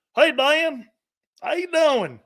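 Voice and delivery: very high, slow, drawn-out Alabama drawl. Imitating Joe Namath greeting someone: Joe Namath impression, Southern accent. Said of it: "How come Joe Namath has an accent from the South".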